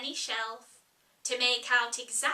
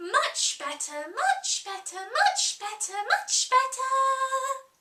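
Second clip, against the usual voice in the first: voice climbing high to a drawn-out squeak, then bleat; 9 semitones higher, 4 dB louder than usual. Narrator reading the Queen's reply to Alice, voice rising into a squeak. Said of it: "her voice rising into a squeak".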